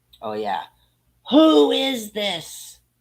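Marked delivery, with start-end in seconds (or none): 1.3-2.7 shrill, high, loud, enraged voice. Retelling how the man who answered the phone sounded: imitating a furious man. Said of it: "he is fucking pissed".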